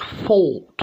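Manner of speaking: upper-class British, high throaty gagging O in fought. Demonstrating the O sound in "fought", posh British accent, deep gagging O. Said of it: "if you go to the posh accent, you have a really kind of a kind of deep gagging O sound".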